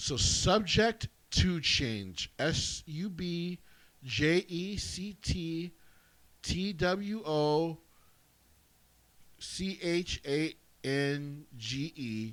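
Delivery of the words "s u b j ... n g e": each letter spelled out one by one, very slowly. Spelling out an email address for viewers: saying it slowly. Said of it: "I'm gonna say it slowly".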